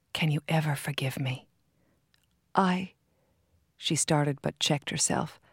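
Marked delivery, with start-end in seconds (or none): 0.2-1.5 hushed, quieter whispering. Holding her hands tightly, a man asks his darling's forgiveness: whispering. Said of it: "he whispered".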